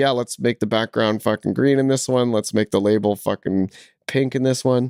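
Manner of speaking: ordinary talk, nothing marked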